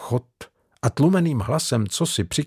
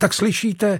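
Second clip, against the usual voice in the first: sharp, snapping, pitched-up delivery; 8 semitones higher than usual. Narrator reading Patricia ordering Cartier out when he won't move, snapping at him. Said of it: "Utrhla se na něho".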